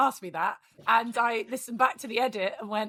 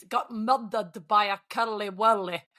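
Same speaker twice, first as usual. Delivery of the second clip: Scottish-accented voice. Speaker giving the only line they can say in Scottish: Scottish accent Taggart line. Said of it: "in a Scottish accent".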